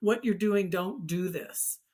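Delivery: normal talking voice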